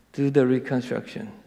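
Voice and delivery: ordinary talk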